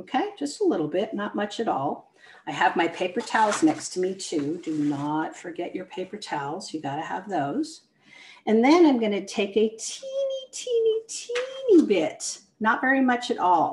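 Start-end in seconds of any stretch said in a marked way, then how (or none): 9.7-11.9 put-on heavy stress on every single teeny. Demonstrating a step for the ear, speaker talks viewers through it with stress on teeny. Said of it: "emphasis on teeny".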